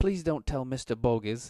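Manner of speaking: put-on scared, fearful girl's voice, begging and pleading. Voicing a girl offering oysters with a "don't hit me" look: fearful pleading girl. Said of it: ""Don't hit me" kind of expression on her face".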